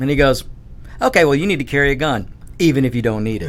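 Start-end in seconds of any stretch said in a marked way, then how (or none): none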